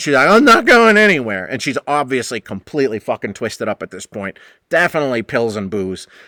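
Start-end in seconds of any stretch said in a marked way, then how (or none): 0.3-1.5 put-on stubborn, childish, high, loud petulant voice. Retelling a guest refusing to leave the kitchen: imitating Tracy as a petulant child. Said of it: "like a fucking petulant child".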